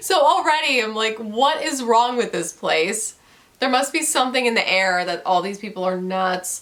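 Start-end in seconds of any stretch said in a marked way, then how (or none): none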